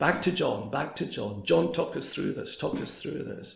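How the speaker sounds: usual speaking voice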